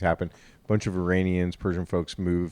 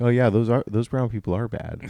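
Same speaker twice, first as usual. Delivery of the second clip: normal talking voice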